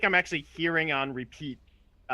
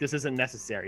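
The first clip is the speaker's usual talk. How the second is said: plain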